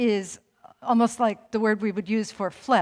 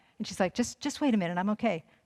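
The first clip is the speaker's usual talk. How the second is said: normal talking voice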